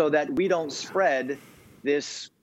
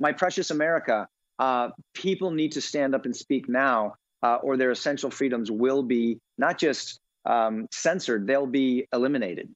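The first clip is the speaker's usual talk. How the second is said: usual speaking voice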